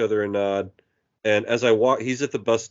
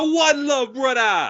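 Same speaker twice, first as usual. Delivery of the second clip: imitated man's voice, pitched much higher. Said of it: "He's like, he's like".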